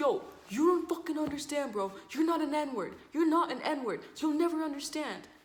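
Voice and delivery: mock heated yelling, very high pitch, loud. Retelling what one person yelled at another during an argument in a classroom, retelling a yell. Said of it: "So they're yelling at each other".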